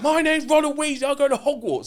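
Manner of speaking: put-on very high shout. Retelling a Harry Potter phone scene, retelling Ron Weasley shouting. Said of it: "you don't have to shout down a phone".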